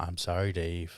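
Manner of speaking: low, soft computer voice.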